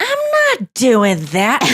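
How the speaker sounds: swooping, slow way of talking. Showing how the other speaker gets imitated on stage: imitating the other speaker. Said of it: "I do you where it's like".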